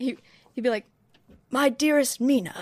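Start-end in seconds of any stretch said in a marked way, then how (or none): 1.5-2.6 constricted, caged-chest period-drama delivery. Giving an attempt at an impression when asked: Keanu Reeves impression in Dracula. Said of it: "my Keanu Reeves impression in Dracula".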